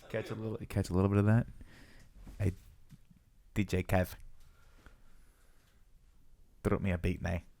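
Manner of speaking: put-on South African accent. A podcast host asks DJ [name] for a beat, put-on South African accent. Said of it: "That's my South African accent".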